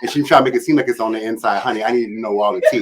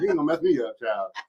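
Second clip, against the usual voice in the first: very soft, hushed, exaggerated, over-the-top flamboyant voice; 3 semitones higher, 10 dB quieter than usual.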